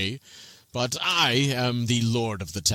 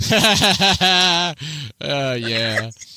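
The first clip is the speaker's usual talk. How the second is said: very loud, high, scornful mocking laugh; 3 semitones higher, 6 dB louder than usual. Narrating a game scene, voicing a character answering another's scoff: laughing. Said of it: "Steve looks at him and goes".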